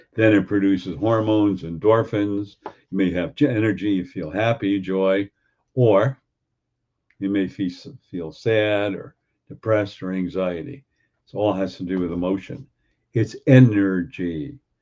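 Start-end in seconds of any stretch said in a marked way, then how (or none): 13.1-14.5 deliberately very slow pace. Explaining to listeners, saying it very slow. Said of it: "I'm saying that very slow".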